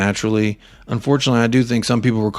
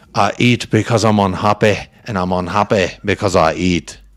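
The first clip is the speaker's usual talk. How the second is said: put-on terrible, laid-on Scottish accent. Warning a fellow speaker, then launching into a bad Austin Powers impression. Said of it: "ready to hit you with my my impression".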